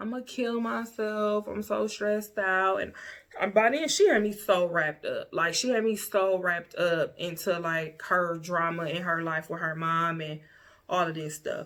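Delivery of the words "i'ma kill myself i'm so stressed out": put-on tearful, crying voice. Retelling a friend's phone call, imitating someone crying. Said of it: "she called me crying".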